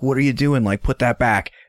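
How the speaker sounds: put-on, really angry, commanding tone. Retelling how he turned on Lenore, imitating an angry order. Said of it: "his tone changes and he's like real pissed".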